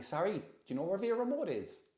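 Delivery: put-on genuine-sounding Cork accent. Retelling how Roseanne asked a shop lady for directions, imitating Roseanne's Cork accent. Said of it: "It sounded like a real Cork accent".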